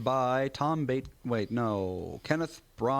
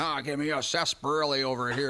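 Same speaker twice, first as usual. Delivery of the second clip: corny, theatrical stage-pirate voice. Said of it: "she was literally doing, like, a pirate".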